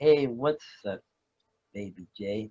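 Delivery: lazy, really slow, drawn-out voice. Imitating how the listener answers the phone: really slow impression. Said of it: "that's my impression of you. Like it's really slow".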